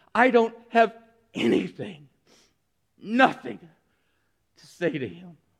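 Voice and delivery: forced out through clenched, gritted teeth. Telling the story of Mary speaking to her sister Martha, through gritted teeth. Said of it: "looks at Martha through gritted teeth and says".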